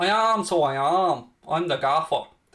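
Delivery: put-on Dundalk accent. Answering viewers about visiting Dundalk, doing a Dundalk accent impression. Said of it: "There's my Dundalk impression for you".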